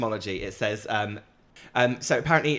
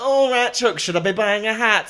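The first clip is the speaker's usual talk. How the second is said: put-on high-pitched Yorkshire accent; 8 semitones higher, 6 dB louder than usual. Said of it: "I did her from Yorkshire".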